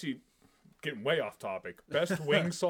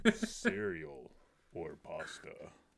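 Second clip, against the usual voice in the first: sultry, creaky, soft, husky sexy voice; 7 dB quieter than usual. Repeating someone's question the way he said it, imitating his sexy voice. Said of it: "say the first one in his sexy voice".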